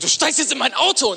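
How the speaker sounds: mock aggressive, very high, loud and forceful. Retelling a stranger pressuring the speaker into her car: retelling an aggressive command. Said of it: "Aber die wurde so aggressiv".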